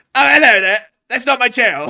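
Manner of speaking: piercing, very high, very loud put-on Cockney accent. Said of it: "enjoying the Cockney accent".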